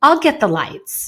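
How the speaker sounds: mock passive-aggressive sarcasm. Explaining sarcasm with a family example, imitating dad's sarcastic remark. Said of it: "That was the sarcasm".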